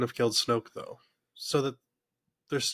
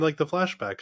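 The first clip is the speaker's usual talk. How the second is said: ordinary talk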